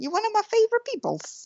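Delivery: very high, squeaky, swooping voice. Telling the other speaker they're a favorite person: very high-pitched voice. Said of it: "My voice can't go any higher".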